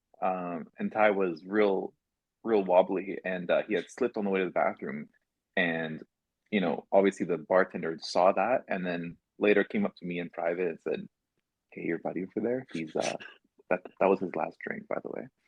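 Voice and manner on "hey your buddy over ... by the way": quick, polite, easygoing, nice and calm tone. Retelling a bartender privately cutting off a friend, imitating a nice calm voice. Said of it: "In a nice, calm voice".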